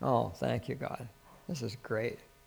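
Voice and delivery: soft, quiet speech. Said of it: "It's just quietly say".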